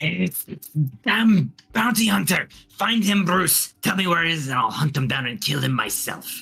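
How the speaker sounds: words juddering, chattering teeth. Voicing a character cold from death's chill, teeth chattering from cold. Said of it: "his teeth chattering from the cold of the death".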